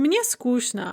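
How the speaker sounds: plain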